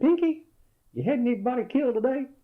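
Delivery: very high, loud, squeaky voice. Retelling a phone call where Patton asks another general about casualties, Patton's high squeaky voice. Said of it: "he had a real high, squeaky voice".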